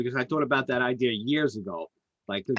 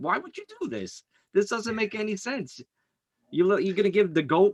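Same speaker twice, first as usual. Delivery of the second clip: mock, high-pitched shouting; 8 semitones higher than usual. Retelling own yelling at the tv while watching: retelling own yelling. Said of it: "I'm yelling at the T V".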